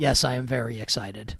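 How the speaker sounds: mimicked flat monotone. Quoting the other person's reply back at them, imitating their monotone. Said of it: "you talk in monotone".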